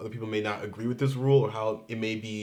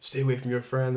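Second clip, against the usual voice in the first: loud yelling; 2 semitones higher than usual. Retelling a clerk behind the counter scolding: imitating someone yelling. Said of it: "yelling at me".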